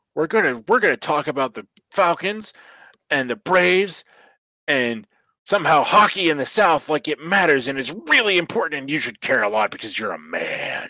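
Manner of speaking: mock, pumped-up sports radio host voice.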